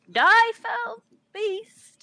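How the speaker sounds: very high-pitched, loud, croaked battle cry. Retelling what she said while stumbling and about to throw up, croaked. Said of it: "She kind of croaked".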